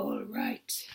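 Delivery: very low, deep, hushed giant voice. Reading a story aloud, the giant answers an order: deep giant voice. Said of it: "In a deep voice, the giant said".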